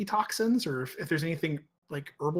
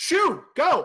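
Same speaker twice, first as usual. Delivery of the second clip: very high, shrill, raven-ish, raised yell; 11 semitones higher, 7 dB louder than usual. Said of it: "yelling at them in raven".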